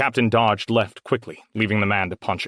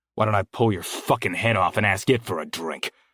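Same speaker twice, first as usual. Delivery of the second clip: menacing, violent, angry tone. Narrator reads a man's reply to Anders' offer of a drink, an angry threat. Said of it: "He was tall, broad, dirty, and angry. / He was tall, broad, dirty, and angry. / he shouted, / the man threatened, / and angry".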